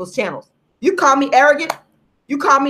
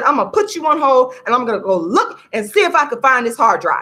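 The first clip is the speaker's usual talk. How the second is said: mock commanding voice, firm and authoritative. Retelling a phone call, quoting the man who put the speaker on hold; imitating an authoritative tone. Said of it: "he said in a very authoritative tone".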